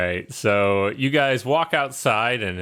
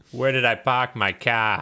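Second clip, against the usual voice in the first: put-on Boston accent. Trying a Boston accent after being asked for one: Boston accent. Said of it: "we can try".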